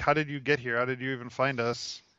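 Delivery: plain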